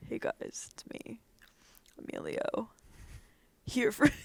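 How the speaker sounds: low, breathy masculine voice. Speaker shows friends the low voice being practiced: practiced low Emilio voice. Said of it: "I've been practicing my low voice".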